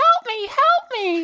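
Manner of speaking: shrill, very high, very loud, mocking woman's cry. Voicing a bird man mimicking a woman's cry: mocking imitation of a woman's cry for help. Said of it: "makes the mocking voice in one that does not fit his body".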